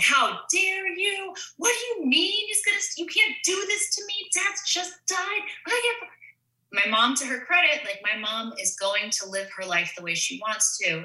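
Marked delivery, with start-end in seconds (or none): 0.0-6.1 put-on shrill, high-pitched, screaming utter meltdown. Retelling own meltdown on the phone with mom: imitating own screaming meltdown. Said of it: "utter screaming meltdown on the phone".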